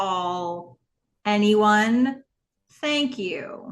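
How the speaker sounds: put-on very slow, deliberate speech. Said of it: "I'm going to say it very slow".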